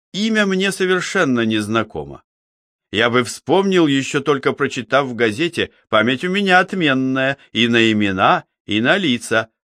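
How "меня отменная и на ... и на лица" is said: ordinary delivery, nothing marked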